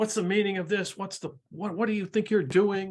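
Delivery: irritated angry yelling. Voicing an irritated woman marched along by soldiers: yelling in anger. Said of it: "you can see she's just yelling at them".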